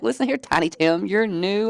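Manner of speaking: angry, high-pitched tone. Retelling telling off someone who said calm down: retelling own angry outburst.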